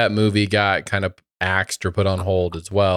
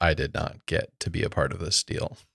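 dropped, sad, hushed voice; 3 semitones lower, 8 dB quieter than usual. Hearing others got a Disney deal, the speaker says they missed out, lowered, sad voice. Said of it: "Your voice went down".

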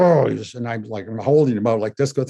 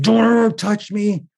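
mock shrill outburst, very high scream; 10 semitones higher than usual. Retelling how a boy wheeled around at a touch: imitating a boy screaming. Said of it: "He just screamed".

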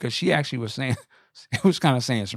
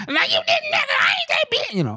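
mock very emotional girly voice, higher. Retelling a man's angry retort on stage: imitating a very emotional feminine retort. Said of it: "very emotional, female".

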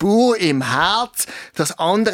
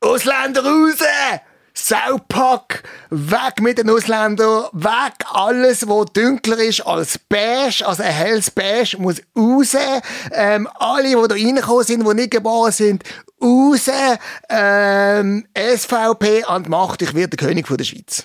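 each ähm stretched out; 4 semitones higher than usual. Answering an interviewer's question while playing Blocher: Blocher impression. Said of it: "du interviewst mich und ich bin der Blocher".

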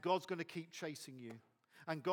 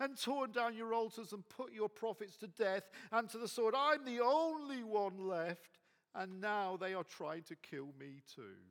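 mock whining, put-on whiny voice; 5 semitones higher than usual. Acting out what he says in the scripture, in a put-on whiny voice. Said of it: "puts on his what I call the whiny voice".

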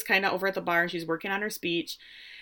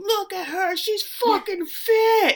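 shrill yell, very high and very slow; 12 semitones higher, 4 dB louder than usual. Retelling how she shouted to the photographers from behind them, shouted.

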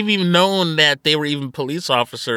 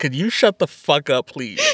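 put-on fed-up, furious, pissed-off snap. Retelling how Jason snaps at Bulk and Skull: imitating an angry snap. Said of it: "he legit sounded so pissed".

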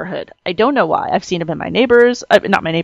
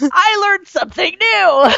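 mock thrilled, excited outburst, pitched very high; 11 semitones higher than usual. Retelling learning a new bird fact: imitating own past excitement. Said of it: "but I was excited".

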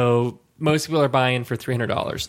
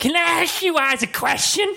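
put-on very high, boozy, drunk party-girl voice. Retelling a woman at a cash game, imitating a drunk girl. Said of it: "That's my drunk girl voice".

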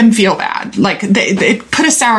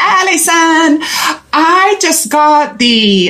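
put-on, pitched-up Puerto Rican accent; 6 semitones higher than usual. You like to talk like the woman who sent you a message; use her Puerto Rican accent. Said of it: "She has a Puerto Rican accent. And so I like to talk like her".

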